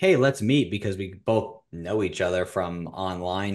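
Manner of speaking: ordinary talk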